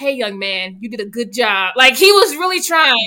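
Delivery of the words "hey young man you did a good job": put-on old man voice with warm, encouraging tone. Retelling how the eighty-year-old Logan praised a boy: imitating Logan. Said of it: "He got his old behind up and was like".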